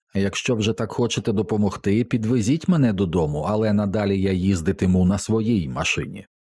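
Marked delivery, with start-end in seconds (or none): none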